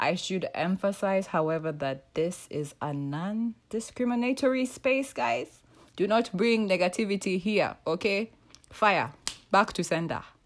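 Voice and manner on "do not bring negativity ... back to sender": line delivered in a put-on Nigerian accent. Telling people not to bring negativity here, in a put-on Nigerian accent. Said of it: "in a Nigerian accent".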